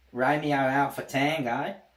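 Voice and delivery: put-on Australian accent. Saying romeo alpha tango in a put-on australian accent. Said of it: "See, my Australian accent's alright".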